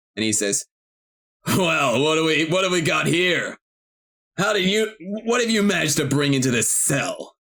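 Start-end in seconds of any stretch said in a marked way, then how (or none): 1.5-7.3 intimidating, stern, amused, mocking menace. Voicing a prison chief questioning a prisoner: smirking, intimidating. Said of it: "he looks at you sternly, but also with a smirk".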